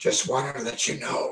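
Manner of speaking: very quiet, hushed, breathy whisper. Voicing a man who steps back and whispers to you: whispering. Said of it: "he kind of whispers to you".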